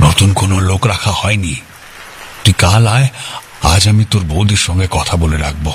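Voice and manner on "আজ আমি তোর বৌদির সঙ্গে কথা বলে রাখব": plain reading voice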